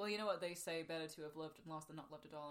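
ordinary talk

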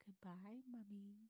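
eerie, unsettling, creepy tone. Retelling how Lex stares through the door crack: imitating Lex's creepy goodbye. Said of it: "Bye, creepy".

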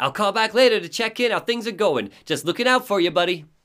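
put-on heavy, high-pitched New York accent. Playing a game, voicing a phone message to a buddy, Barry Wheeler New York accent. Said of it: "to hear the New York accent".

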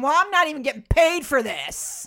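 put-on yelling. Speaker retelling a man yelling at Sean, retelling a yell. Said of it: "And he yelled at her saying".

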